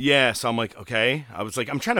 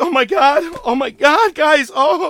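very high, very slow, drawn-out crying wail; 8 dB louder than usual. Retelling how MJF cried after reaching the back: imitating MJF crying. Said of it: "basically crying like a bitch".

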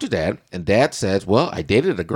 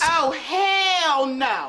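extra-emphatic, very high-pitched cry, hell drawn out. Repeating a reaction one more time for emphasis: exclamation said for emphasis. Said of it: "One more time for emphasis".

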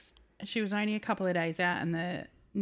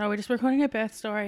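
plain

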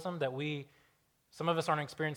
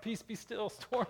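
soft, sleepy, yawning delivery; 7 semitones higher, 5 dB quieter than usual. Acting out how he spoke to the storm while asleep, mock yawning while speaking. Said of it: "he's like yawning".

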